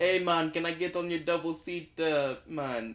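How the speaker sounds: put-on Jamaican accent. Playing a bike rider in a two-person scene, in a jamaican accent.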